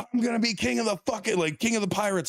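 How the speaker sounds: put-on angry voice. Speaker retelling Luffy's declaration on the platform, mock-angry Luffy declaration. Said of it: "all angry and shit".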